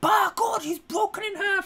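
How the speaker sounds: very high, excited wrestling announcer voice. Trying out American accents: JR wrestling announcer impression. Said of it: "like J R from if you watch W W E".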